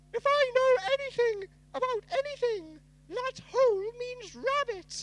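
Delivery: very high-pitched, loud storybook character voice. Reading a story aloud, the reader voices a character: Lolly voice. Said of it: "this will be my lolly voice".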